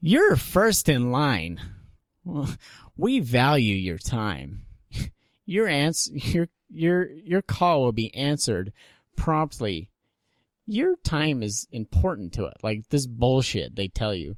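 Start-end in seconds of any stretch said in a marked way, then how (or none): 0.0-12.6 sweet, polite, high, sing-song automated call-centre lady voice. Imitating the recorded hold message that plays while on hold: imitating recorded call-center lady. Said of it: "they get some nice little innocent lady to come on and record".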